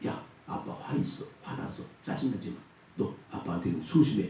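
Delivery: hushed whisper.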